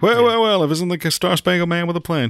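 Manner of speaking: quick southern drawl. Quoting a favorite movie line: Tommy Lee Jones impression. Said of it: "fast, but, like, with a southern drawl".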